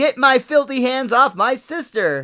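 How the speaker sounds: acted-out shrieking outburst, high, loud scream. Retelling a cartoon scene where Bart screams at the fly creature: imitating Bart screaming.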